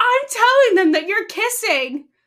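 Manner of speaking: put-on high, loud taunting voice like a tattling kid. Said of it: "made me think that she's like".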